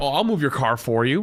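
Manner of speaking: dead serious, completely straight delivery. Retelling a delivery worker's joke offer to move the car: imitating a serious tone. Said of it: "said it in such a serious tone".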